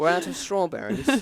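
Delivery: refined, elegant, high British accent. Trying out a British accent while being coached, elegant British accent. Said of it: "it's like more elegant".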